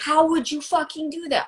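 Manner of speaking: exasperated yell. Retelling being alone at the computer, reenacting yelling at computer. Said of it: "Sometimes I'm yelling at my computer like".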